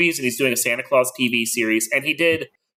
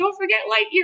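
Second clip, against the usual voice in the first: small, squeaky, tiny, very high little voice. Retelling a voice in the back of the mind: tiny voice. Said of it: "I heard this tiny voice go".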